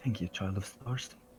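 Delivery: barely audible, hushed, soft half-whisper. Narrating a scene, give the droid's line to the star, half-whispering. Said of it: "The droid whispers".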